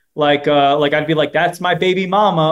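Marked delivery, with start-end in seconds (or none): none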